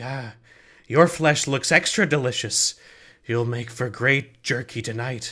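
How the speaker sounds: two eerie, creepy voices speaking as one in unison. Voicing two daughters speaking together to a player: daughters speaking in unison. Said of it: "the two daughters say almost, like, in unison".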